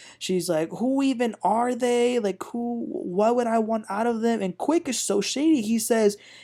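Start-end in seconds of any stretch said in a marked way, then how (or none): 0.7-4.4 going off in an angry ranting outburst. Retelling a reality show scene where Ashley goes off: imitating Ashley going off. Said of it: "And Ashley goes off".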